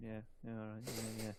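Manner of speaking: mock moody, sulky, can't-be-bothered, switched-off tone. Speaker imitates someone's reply when asked what they think, mock-moody. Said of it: "you give that reply like you kind of go... And it's so moody".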